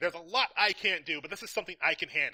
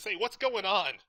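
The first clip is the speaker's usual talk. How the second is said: put-on snap, higher pitch; 3 semitones higher than usual. Retelling a scene where Tommy is questioned, imitating Tommy snapping. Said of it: "Tommy sort of snaps and says".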